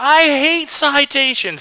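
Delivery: put-on, shrill, very high screaming yell. Retelling a friend yelling at a ranger over a citation: imitating Kirk yelling. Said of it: "Kirk just starts yelling".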